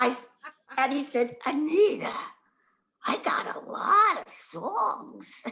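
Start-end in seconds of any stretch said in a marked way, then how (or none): 1.4-5.4 raspy voice, slow, pitched up, words drawn out. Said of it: "he had this raspy kind of voice".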